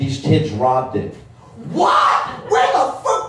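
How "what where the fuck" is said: shrill, high, drawn-out shrieking scream. Speaker retells his dad hearing that kids stole his bike, retelling a scream. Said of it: "He's screaming now".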